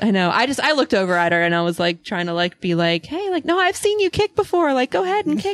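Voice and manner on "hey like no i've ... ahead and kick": put-on sugary sweet tone, pitched way up. Retelling how they encouraged a scared child to kick: retelling a sweet tone. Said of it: "I tried to be, like, sweet".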